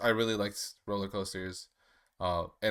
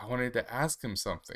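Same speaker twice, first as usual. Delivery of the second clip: put-on sad child voice; 2 semitones higher than usual. A speaker retelling a boy's reaction after meeting Spider-Man: imitating Toby sounding sad. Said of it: "he like is immediately sad".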